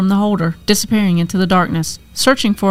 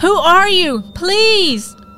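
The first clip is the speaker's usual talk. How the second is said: very high, very slow, whimpering, pleading voice; 10 semitones higher than usual. Narrator reading Becca calling to a still figure in the room, whimpering. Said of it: "Becca whimpering now".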